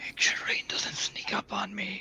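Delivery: whispered aside in character voice. Voicing a character asking Roland for a warning about Rain: whispering in character. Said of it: "as I'll whisper to Roland".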